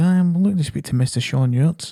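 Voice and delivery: put-on English accent. Retelling a phone call, the speaker quotes the caller in an English accent. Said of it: "English accent".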